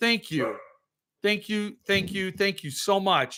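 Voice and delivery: voice catching with emotion. Thanking Patty and the others, choked up with emotion. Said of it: "I'm getting choked up here now".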